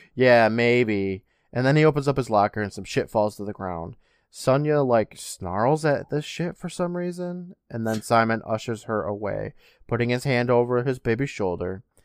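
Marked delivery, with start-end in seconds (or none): 0.2-1.2 acted-out mock-sarcastic delivery. Recapping a scene, speaker quotes a character's reply, retelling a sarcastic reply. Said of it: "Evan sarcastically says".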